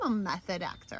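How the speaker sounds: ordinary talk, nothing marked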